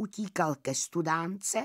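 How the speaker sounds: plain reading voice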